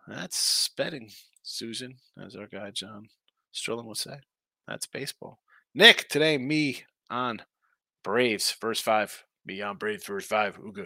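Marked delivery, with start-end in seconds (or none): 9.4-10.8 broken caveman talk, low and soft. Host giving a betting pick on the Braves, caveman impression. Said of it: "A little caveman impression".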